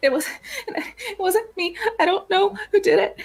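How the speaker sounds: very high, uncontrollable sobbing through the words. Voicing a character who denies guilt while questioned: sobbing uncontrollably. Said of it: "uncontrollably sobbing".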